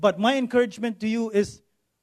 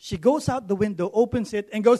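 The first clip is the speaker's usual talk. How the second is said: normal talking voice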